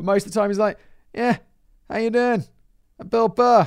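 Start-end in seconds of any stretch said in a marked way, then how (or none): 1.1-3.6 relaxed, lazy, low-energy, laid-back delivery. Comparing energy levels, showing how he talks: imitating Bill Burr, super chill. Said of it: "Bill Burr's super chill. He kind of speaks like this".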